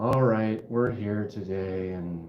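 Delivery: put-on low, slow, flat, drained, can't-be-bothered monotone. Retelling how one's own video intro sounded: imitating own low-energy voice. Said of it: "I can just hear my voice where it's just kinda like".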